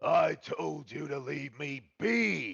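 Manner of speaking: creaky, slow, rough, drawn-out ogre yell. Narrating a scene, voicing a nine-foot-tall local yelling at someone, giant character yelling. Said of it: "little one yells at him".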